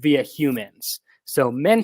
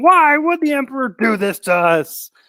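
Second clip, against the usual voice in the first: put-on, very high-pitched shouting; 11 semitones higher, 4 dB louder than usual. Retelling a film scene, imitating Raban yelling. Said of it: "Raban's yelling at him".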